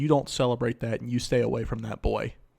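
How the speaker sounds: mock-stern, acted stern voice. Retelling what their mom said to them at eight years old, imitating mom's stern voice. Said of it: "in a very stern voice said".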